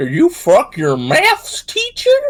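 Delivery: put-on off-target, goofy American accent, swooping. Retelling a video where a mum confronts her kid: failed American accent. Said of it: "that's not the right American accent".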